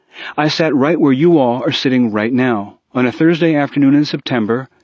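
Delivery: plain reading voice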